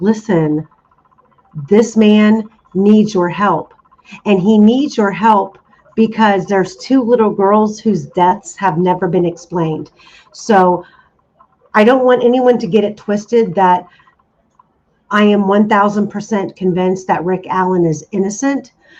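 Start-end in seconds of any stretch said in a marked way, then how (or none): none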